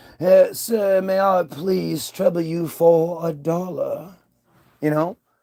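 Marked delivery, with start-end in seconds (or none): 0.2-4.2 refined, courtly, regal, genteel Southern drawl. Showing how many people in the south really talk: genteel southern accent. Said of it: "that regal accent".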